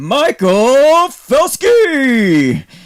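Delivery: very high, very loud, booming, swooping pompous announcer voice. Host reading out a YouTube commenter's name, giving a grand pompous announcement. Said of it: "I gotta give him the pomp and circumstance".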